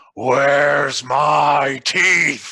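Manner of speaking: loud bellowing roar, "my" drawn out. Voicing a creature whose words echo across the mountaintops: roaring shout. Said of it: "you hear an echoing roar".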